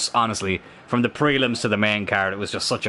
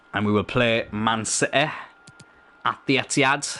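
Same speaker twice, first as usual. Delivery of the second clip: terrible, clumsy put-on Manchester accent. Imitating someone talking about jersey colours and a match, in a terrible manchester accent. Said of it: "That was a terrible Manchester accent".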